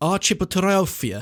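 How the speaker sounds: put-on Eastern European accent. Trying a long phobia word a third time, in an eastern european accent. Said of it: "I'm giving it like an Eastern European accent".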